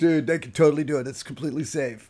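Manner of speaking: easygoing, laid-back surfer-dude speech. Retelling how Nick talks to the insurance company: imitating Nick's surfer talk. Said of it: "he talks like this".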